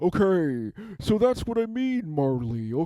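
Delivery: ordinary delivery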